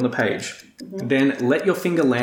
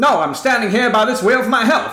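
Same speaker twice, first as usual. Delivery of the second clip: very high, shrill, loud, snarky parrot voice; 9 semitones higher, 5 dB louder than usual. A parrot by a game wheel answers a hopeful player, sarcastic parrot wisecrack. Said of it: "the parrot cracks".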